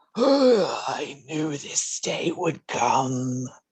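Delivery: rasping, half-human speech. A fallen winged creature suddenly speaks: raspy human voice from creature. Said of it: "you actually hear a raspy human voice come from it".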